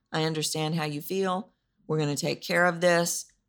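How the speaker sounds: dull, flat, level monotone with no life. Contrasting expressive and monotone replies to someone upset: flat monotone. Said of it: "if you're in monotone land".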